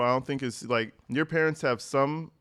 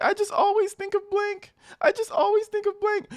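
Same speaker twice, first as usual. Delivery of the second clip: put-on, very high, sobbing fake crying; 4 dB louder than usual. Mocking how a caller talks about her son: mocking her fake crying. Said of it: "She's not even real crying. She's like".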